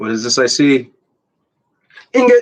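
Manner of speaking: loud, thrilled, swooping shout rising as it goes. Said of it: "Sorry, that was loud".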